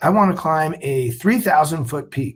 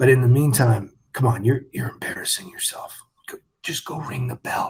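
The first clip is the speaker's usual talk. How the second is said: whispering, lower pitch; 4 semitones lower, 4 dB quieter than usual. Retelling what instructors said during Hell Week: imitating instructors whispering. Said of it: "they would whisper in my ear".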